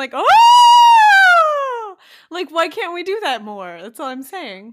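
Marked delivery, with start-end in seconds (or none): 0.1-2.0 high, loud excited scream. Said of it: "More excited scream, like".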